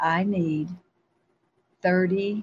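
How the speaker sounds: ordinary delivery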